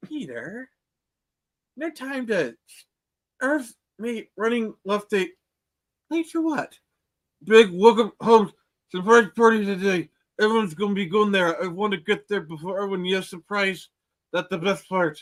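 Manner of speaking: garbled speech with a full mouth. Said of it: "when Peter has stuff in his mouth".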